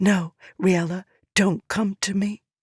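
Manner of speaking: secretive, intense, confiding tone. Reading a character's warning to another character, in a hushed tone. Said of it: "she said in a hushed tone".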